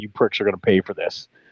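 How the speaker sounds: put-on, acted-out angry voice. Recounting being handed the wrong ration by the tank crew: retelling an angry threat. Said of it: "I was very mad".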